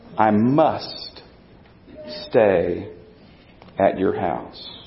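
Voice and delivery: low, slow, deliberate reading. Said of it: "I want you to read it slowly".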